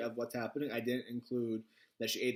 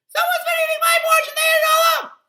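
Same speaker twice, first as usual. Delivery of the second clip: shrill, very high, loud odd cry; 17 dB louder than usual. Reading the three bears story aloud, odd Baby Bear voice. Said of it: "That's an interesting voice that came out".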